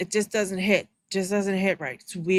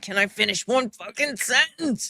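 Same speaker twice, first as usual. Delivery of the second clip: mock angry woman voice; 2 semitones higher than usual. Voicing what a woman on screen thinks while someone talks: imitating an angry woman. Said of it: "Look how mad she is".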